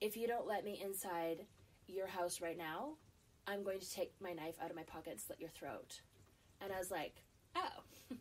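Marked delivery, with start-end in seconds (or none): 0.0-6.0 perfectly calm, even, unraised voice. Retelling what a man said to the speaker, imitating a perfectly calm tone. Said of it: "in a perfectly calm tone".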